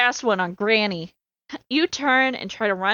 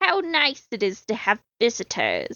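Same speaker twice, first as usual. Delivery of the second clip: hoarse, rasping voice. Mrs. Bigley answers the visitor who calls her name, in a raspy voice. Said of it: "she replies in a raspy voice".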